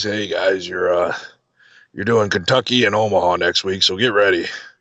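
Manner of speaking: raspy, rasping voice. Retelling a phone call from Harley about upcoming shows, in a raspy Harley impression. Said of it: "in his raspy voice".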